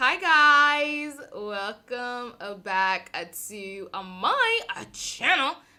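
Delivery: very slow, very loud, drawn-out delivery. Opening a channel video and greeting the viewers: very slow. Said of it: "I don't know why I said that so slowly".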